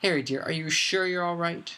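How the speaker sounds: worried, fussing voice. Narrated scene: one character speaks to another while walking, worried voice. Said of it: "in a worried voice".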